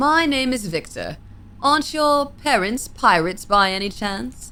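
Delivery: put-on British accent. Voicing a demon character introducing himself; British accent. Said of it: "What's a good voice for him? British?".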